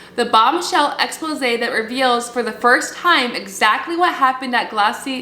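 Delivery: ordinary delivery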